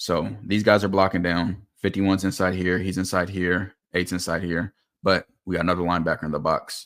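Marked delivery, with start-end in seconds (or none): 5.0-6.9 fast, rushed, rattled-off speech. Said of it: "Sorry if I'm talking too fast".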